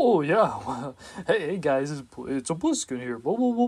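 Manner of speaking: happy, goofy seal-like voice. Speaker shows listeners how they sound when really happy: goofy seal-like voice. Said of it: "I get goofy and I start sounding like a seal".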